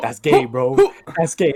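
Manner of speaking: loud put-on voice, words broken up by laughing. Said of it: "he'd start laughing".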